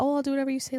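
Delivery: mock sweet compliant child voice. Imagining a sweet, obedient kid's reply: imitating a sweet little kid. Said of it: "the sweet little".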